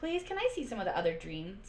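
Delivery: ordinary delivery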